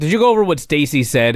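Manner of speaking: plain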